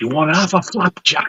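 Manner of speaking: hushed, high-pitched stage half-whisper. Retelling a friend leaning over at the film: imitating a half-whisper. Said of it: "He leans over and whispers".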